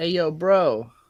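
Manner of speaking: put-on New York accent. Showing what their New York accent boils down to, in a New York accent. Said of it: "my New York accent can be boiled down to".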